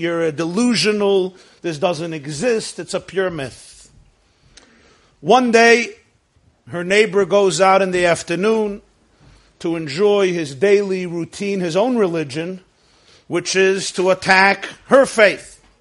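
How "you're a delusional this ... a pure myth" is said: usual speaking voice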